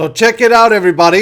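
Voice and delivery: hoarse, scratchy voice. Calling on everybody to check something out: raspy voice.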